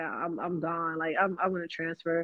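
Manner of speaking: ordinary talk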